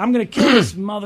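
put-on yelling. Retelling a video where a man yells at a dog: imitating someone yelling. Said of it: "he's yelling at his dog".

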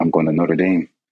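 glum, sad, downcast, reluctant, acted-out delivery. Recounting a past conversation, the speaker repeats their own reply, retelling it sadly. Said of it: "and I said this sad".

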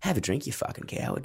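hushed, goading whisper. Acting out the little voice in the head urging a drink: voice of the inner rebel. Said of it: "that little voice in my head goes".

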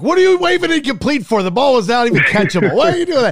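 shrill, loud yelling. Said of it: "I'm one of those people that yells at the T V".

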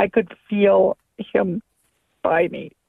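tearful, crying while talking. Telling another speaker about feeling a saint's presence, crying while talking. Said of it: "That's why I'm crying".

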